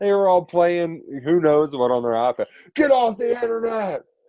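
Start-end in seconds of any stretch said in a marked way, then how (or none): 2.7-4.0 high, screamed, coach-like yelling. Retelling a head coach yelling at a kid on an ipad; retelling a coach screaming. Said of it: "Started screaming at him".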